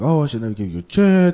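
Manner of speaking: loud, high, angry outburst. Retelling how the boss reacted to quitting: imitating someone going off angrily. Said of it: "The guy just went off of me".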